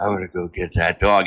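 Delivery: put-on whispering. Mocking a guy who whispers about his runaway dog, imitating a whisper. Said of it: "He whispers".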